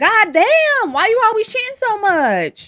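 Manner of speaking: put-on very loud, very high-pitched country twang accent. Imagining what Peggy will say when she complains, in Peggy's country accent. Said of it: "Peggy has a country country accent".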